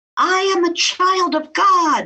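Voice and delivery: very high, long-held, drawn-out scream. Retelling finally screaming out during a near-death experience: retelling a scream.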